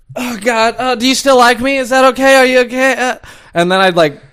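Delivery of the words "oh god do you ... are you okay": mock lunatic yelling, high and frantic. Retelling waking up in the middle of the night: imitating own sleep-yelling. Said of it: "yelling like a fucking lunatic".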